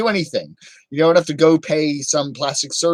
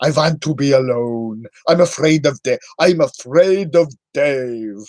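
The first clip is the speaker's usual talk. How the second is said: classic put-on vampire count voice. Talking in a voice the speaker then wonders about, a Dracula voice. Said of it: "Why am I talking like Dracula?".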